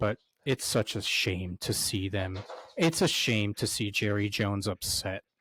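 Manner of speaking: heavily sarcastic, sarcasm laid on in layers. Mocking a rival football team's owner being upset: layered in sarcasm. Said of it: "I'm gonna say this layered in sarcasm".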